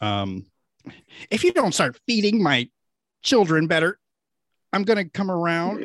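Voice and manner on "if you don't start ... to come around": entitled, complaining, demanding voice. Reading a mother's voicemail to the school aloud: inner Karen voice. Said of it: "channel my, my inner Karen".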